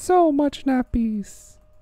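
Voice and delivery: strange, weird, very high voice. Riffing about taking naps, the speaker slips into a weird nappy voice. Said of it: "the weird thing I just did with the nappy voice".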